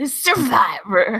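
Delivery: lively presenter voice. Imitating Jeff Probst cheering the show name: imitating an animated Jeff Probst. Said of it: "Probst gets so animated".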